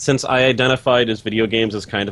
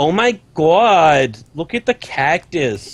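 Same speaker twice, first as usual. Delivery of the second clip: brash, loud New Jersey accent, pitched up; 6 semitones higher than usual. Trying a college girl voice for the others, it comes out as a jersey mom voice. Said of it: "That's like a Jersey mom voice".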